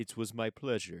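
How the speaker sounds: calm put-on actor voice. Retelling meeting Doug Bradley and his reply, calmly imitating Doug Bradley. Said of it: "he very calmly took a sip of his Pepsi and said".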